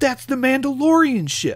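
high, loud, excited gasp.

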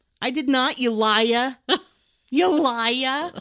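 put-on cute, high-pitched child's voice with Jersey accent. Young boy arguing with another kid on a sailboat, adorable Jersey accent. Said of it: "arguing with the most adorable Jersey accent".

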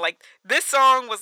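ordinary talk, nothing marked

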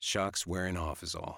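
plain

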